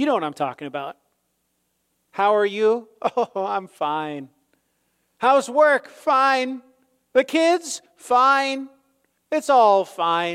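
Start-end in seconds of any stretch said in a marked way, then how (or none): 2.1-10.4 very slow, drawn-out comedian-style delivery, every word stretched. Acting out small talk where everything is fine: Jerry Seinfeld impression. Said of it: "In my best Jerry Seinfeld impression".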